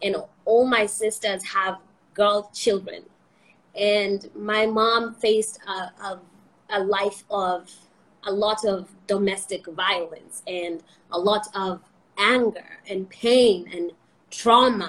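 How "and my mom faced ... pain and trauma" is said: slow voice, heavy with emotion. An interviewee talking about family and women, getting emotional. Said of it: "why am I getting emotional?".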